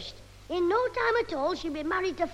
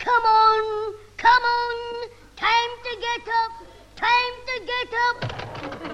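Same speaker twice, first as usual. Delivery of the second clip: horrible, high shouting voice; 5 semitones higher, 6 dB louder than usual. Mimicking the man who drags them out of bed, in a mock horrible shouting voice. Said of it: "that horrible voice shouting".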